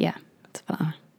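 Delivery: soft, whispered voice.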